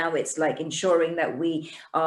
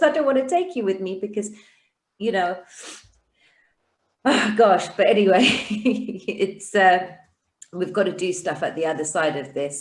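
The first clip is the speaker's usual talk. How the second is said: tearful, choked-up, overcome with feeling; 3 semitones higher, 4 dB louder than usual. Telling viewers about someone leaving on the tenth, getting emotional. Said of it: "I got emotional".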